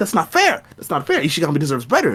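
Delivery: put-on shouting. Acting out a future podcast argument: mock yelling. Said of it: "sometimes I'm gonna be yelling".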